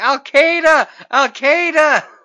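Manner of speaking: loud shriek, very high and very slow. Speaker retells a man who threw a cab driver out, retelling a scream. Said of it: "And just starts screaming".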